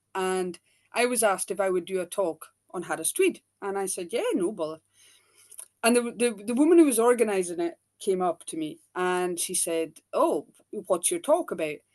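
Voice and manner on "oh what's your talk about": bad, dodgy, fake put-on American accent. Retelling the talk organiser's question to the speaker, in a dodgy American accent. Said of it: "my very dodgy American accent".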